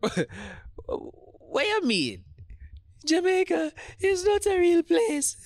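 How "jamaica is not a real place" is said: very high, taunting, mocking falsetto. A man repeats a woman's words back to her, in a mocking falsetto. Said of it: "mocking her voice in his falsetto".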